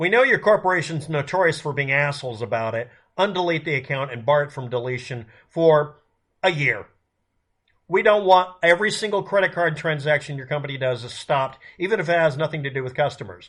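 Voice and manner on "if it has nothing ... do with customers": ordinary talk, nothing marked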